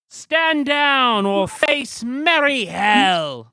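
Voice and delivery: very loud, high, booming, shrill yell. A game master voices an unseen figure yelling down at the players: loud yell. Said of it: "loud voice yell".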